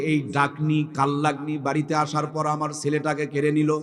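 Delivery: ordinary talk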